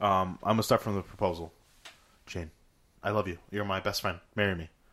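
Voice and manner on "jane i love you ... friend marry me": put-on earnest voice, lower and quieter. Acting out a proposal scene with another speaker: acting as Michael proposing. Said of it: "what Michael should have done impression".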